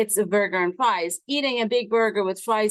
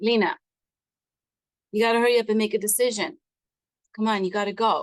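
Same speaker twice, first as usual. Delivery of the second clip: put-on hurried, urgent voice. The speaker retells what a voice said to them, imitating an urgent voice. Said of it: "she's got this urgency in her voice".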